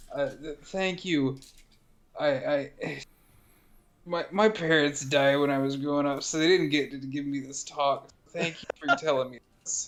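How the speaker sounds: put-on tipsy-sounding little-kid voice with a stammer. Voicing a red-cheeked, starry-eyed character thanking Apple: drunk, childish voice. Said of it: "kinda still childish voice".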